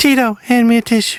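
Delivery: voice pushed way up high. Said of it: "I try to do uh, [name] doing [name]".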